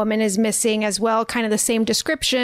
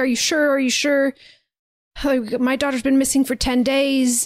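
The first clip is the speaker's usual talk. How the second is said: desperate, anguished, distraught pleading voice; 4 semitones higher than usual. Retelling a film scene where a missing girl's father asks: imitating a distraught father. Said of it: "this man is very, very distraught".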